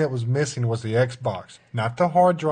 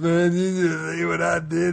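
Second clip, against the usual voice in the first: mock sloppy, tipsy, creaky, slurred drunk voice; 3 semitones higher than usual. Retelling a blackjack player who snuck a chip, imitating a drunk voice. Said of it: "in that drunk voice".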